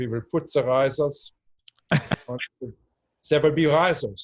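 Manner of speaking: stock, classic put-on German accent. Retelling a man arguing with a friend over risers, classic German accent. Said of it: "with this classic German accent was saying".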